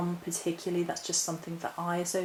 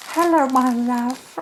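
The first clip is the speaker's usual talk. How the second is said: creepy put-on voice, very loud and high; 7 semitones higher, 13 dB louder than usual. Moving on to the next root in the video, the speaker greets it in a creepy voice. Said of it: "That was really creepy. Let's not use that voice".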